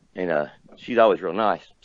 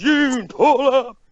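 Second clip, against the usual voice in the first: high, loud call with raised voice. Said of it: "when he raises his voice".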